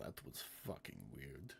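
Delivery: put-on low-pitched woman's voice with deep Russian accent. Voicing a Goliath woman reacting as someone walks away: deep Russian voice. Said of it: "her deep Russian voice".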